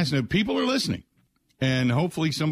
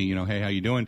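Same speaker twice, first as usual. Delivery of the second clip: plain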